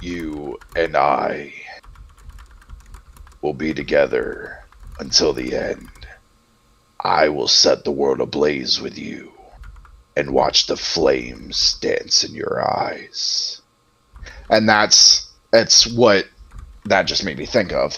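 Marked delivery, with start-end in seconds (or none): 0.0-13.6 very low, deep voice with a new timbre. Demonstrating how the same deep voice changes with its timbre: deep voice, different timbre. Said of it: "that same voice, if I change the timbre".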